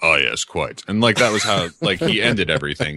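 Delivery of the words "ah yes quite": pompous, boastful, bragging storyteller tone. Showing how a hipster talks, like Commander McBragg: imitating Commander McBragg. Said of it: "He's like".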